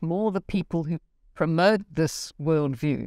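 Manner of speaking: usual speaking voice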